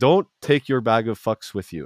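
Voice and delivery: imitated Indian accent. Quoting a guy from a video posted on Instagram, imitating an Indian accent. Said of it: "a guy with like an Indian accent".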